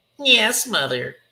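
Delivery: puppet-style creature voice. One character answers another, in a Muppet-like voice. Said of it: "It's like a Muppet".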